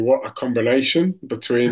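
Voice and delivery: ordinary talk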